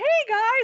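cheerful, all-happy, high-pitched voice. Retelling how Jocelyn greeted them as they walked in: imitating Jocelyn sounding all happy. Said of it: "all happy".

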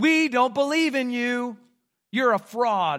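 jeering crowd, mocking and scornful taunting. Speaker retells how onlookers mocked Jesus on the cross; acting out mocking taunts. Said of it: "they just mockingly announced".

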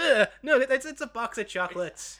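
put-on old woman voice, blurted, spat-out overreaction. Retelling how the grandmother overreacts to chocolates: imitating a grandmother spitting it out. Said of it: "just an overreaction, just spits it out and goes".

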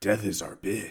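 deep voice dropped way down. Mocking an actor's acting style: Jensen Ackles talking deep. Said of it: "And talking deep".

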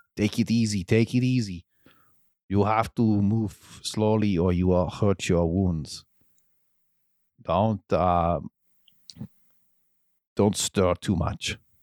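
put-on Austrian-accented action-star voice. Voicing a character tending a wounded player, Arnold Schwarzenegger voice. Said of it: "I'll say it again".

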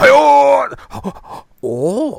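very high, rough, squeezed-out anime-style cry. Mentioning that a show is back, doing an Attack on Titan impression. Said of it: "that's my Attack on Titan impression".

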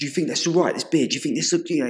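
play-acted rushed, fast, high-pitched shouting outburst. Recounting a man asking them about his beard with his wife nearby, retelling his shouting. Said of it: "He's just like fucking shouted at me".

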